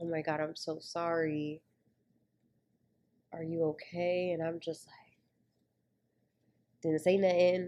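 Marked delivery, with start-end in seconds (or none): 0.0-4.3 worried, concerned delivery of the word sorry. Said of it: "but it was more like".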